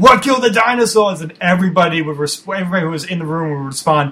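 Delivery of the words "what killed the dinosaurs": shrill, pitched-up scream. Retelling kicking open a dorm door: screaming Arnold Schwarzenegger impression. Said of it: "I'd scream in my Arnold impression".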